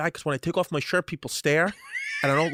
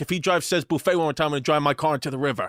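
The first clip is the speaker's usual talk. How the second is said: normal talking voice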